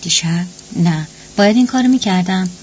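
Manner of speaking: usual speaking voice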